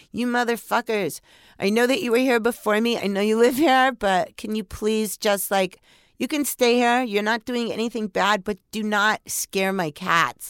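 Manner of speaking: mild, exasperated, half-shouted yelling. Retelling yelling at ghosts who scared the cats: imitating own yelling. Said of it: "I started yelling".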